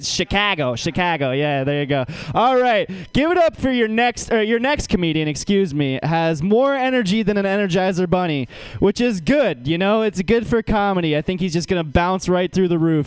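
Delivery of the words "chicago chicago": mock Chicago accent, lower. Teasing the last comedian by imitating how he says the city: imitating a Chicago accent. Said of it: "in the way you say the word Chicago".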